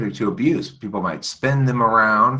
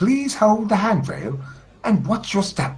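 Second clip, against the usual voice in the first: put-on very high Hong Kong British woman's accent; 12 semitones higher than usual. Imitating the English announcement they keep repeating: Hong Kong-sounding British accent. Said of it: "like a Hong Kongese sounding British accent lady".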